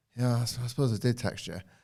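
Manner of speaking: flat, underplayed, stumbling, hardly bothered throwaway delivery. Retelling a wrestler's barely engaged line, imitating Ashanti the Adonis underplaying. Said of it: "he just underplays everything".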